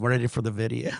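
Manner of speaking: plain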